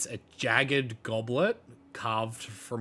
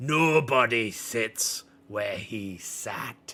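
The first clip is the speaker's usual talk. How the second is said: snort first, then loud, snuffing delivery; 5 dB louder than usual. Role-playing the dragon in the game, a player answers the one on the throne: snuffing and scowling. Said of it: "He just kind of snuffs and scowls and goes".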